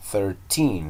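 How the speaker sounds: put-on thirteen with stress on the final syllable -teen. English numbers lesson, repeat after me, stress on teen in thirteen. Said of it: "estaba ocupando el acento en la última sílaba, donde dice teen".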